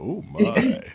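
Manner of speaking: very high-pitched exclamation. Doing a quick impression while reacting to a close score: George Takei voice. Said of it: "My George Takai".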